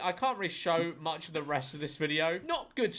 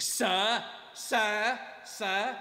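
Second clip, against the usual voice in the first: mock combative, raised-pitch, confrontational arguing voice; 5 semitones higher than usual. Complaining about how Americans say sir when arguing, imitating Americans arguing. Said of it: "when Americans are arguing with people, they're like".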